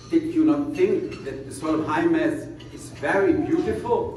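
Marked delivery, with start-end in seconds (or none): none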